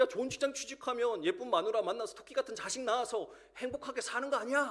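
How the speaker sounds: sudden, high-pitched, angry blurted outburst.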